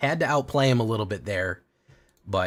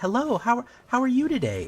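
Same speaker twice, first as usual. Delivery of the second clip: put-on, very high, fake polite voice. Explaining why they avoid a high voice when calling a facility, high fake voice. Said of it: "talk like up here and like a high".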